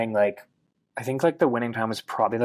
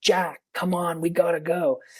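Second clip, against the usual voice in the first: play-acted, hurried, urgent, pitched-up voice; 6 semitones higher than usual. Retelling how his companion Ben yelled at him to leave, retelling a yell. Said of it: "Ben starts yelling".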